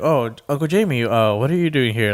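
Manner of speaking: awkward, flustered, really embarrassed, caught-out manner. Retelling a show scene where a character is caught making out: imitating someone really embarrassed. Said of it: "really embarrassed".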